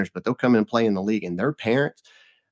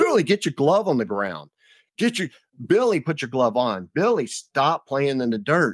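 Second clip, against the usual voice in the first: mock screaming, much higher pitch; 5 semitones higher than usual. Coach retelling screaming at little billy, imitating own screaming. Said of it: "I'm screaming at little Billy".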